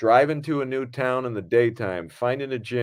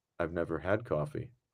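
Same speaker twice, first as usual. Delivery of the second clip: put-on flat dry deadpan, very low and quiet; 7 semitones lower, 11 dB quieter than usual. Retelling what a man answered when offered coffee, imitating a dry reply. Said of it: "in his dry response".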